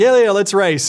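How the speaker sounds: loud, high, put-on sarcastic delivery. Retelling answering a sports-car driver who wanted to race, retelling a sarcastic reply. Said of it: "And I was being sarcastic".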